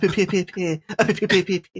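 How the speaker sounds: very slow stuttering, drawn-out stammer on p. Leading the sign-off in a Porky Pig stutter. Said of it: "you actually do a better Porky Pig".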